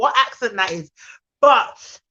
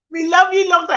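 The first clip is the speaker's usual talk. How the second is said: Jamaican-English accent, pitched up; 7 semitones higher than usual. Friends repeating a phrase in turn; one says it in a Jamaican-English accent. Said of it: "That's a bit Jamaican with a bit of um English".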